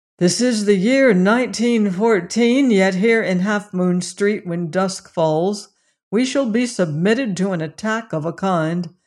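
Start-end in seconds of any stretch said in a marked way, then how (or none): none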